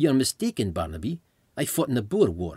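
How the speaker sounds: put-on South African accent. Retelling a reply to a British-accented joke in a back-and-forth; South African accent. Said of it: "his South African response".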